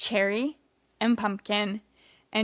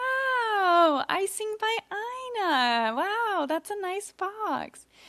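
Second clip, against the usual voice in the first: mock stiff, forced delivery, very high-pitched and slow; 11 semitones higher than usual. Retelling two characters' reactions to cupcakes: imitating stiff fake responses. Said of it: "a very stiff fake responses".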